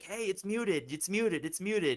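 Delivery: acted, half-hollered mild repeated yell. Acting out the producer saying the mic is muted: imitating someone screaming. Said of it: "He's probably screaming at me like".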